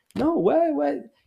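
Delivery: very high-pitched, disbelieving, incredulous protest. Retelling own reply to a warning: retelling own incredulous reply. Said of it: "I was, like, incredulous".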